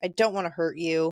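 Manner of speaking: ordinary talk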